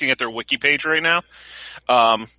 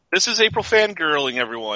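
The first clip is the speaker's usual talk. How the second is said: normal talking voice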